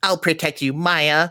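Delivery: goofy, silly talking-doll voice. Quoting what a doll says when it gets hit: goofy doll voice. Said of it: "it has like a goofy ass voice".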